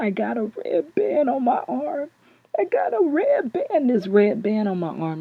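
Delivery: tearful sobbing, high and swooping. Retelling a hysterical phone call, imitating the caller crying. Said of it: "and he's crying".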